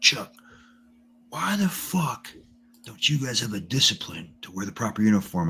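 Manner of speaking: put-on furious general voice, high, angry yelling. Retelling how an angry general in his office cut someone off: imitating a general yelling. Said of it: "he's yelling at everybody".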